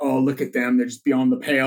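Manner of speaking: normal talking voice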